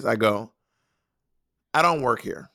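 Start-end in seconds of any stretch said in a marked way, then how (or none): 1.7-2.4 put-on flat, deadpan delivery. Retelling a reply to shoppers at a fabric store: imitating own deadpan reply. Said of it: "I say it in that voice".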